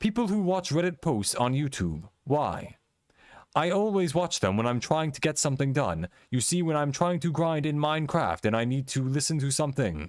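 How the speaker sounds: put-on computer-generated text-to-speech reading voice. Showing what narrated Reddit post videos sound like: imitating a robot voice. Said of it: "you do the voice really good".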